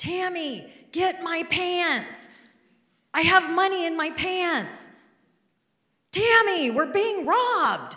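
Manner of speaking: high, loud, panicked yelling in alarm. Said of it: "my husband yelling".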